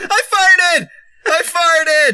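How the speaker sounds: goofy, silly outburst. Suggesting what someone could just say, a silly exclamation. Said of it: "So you just be like".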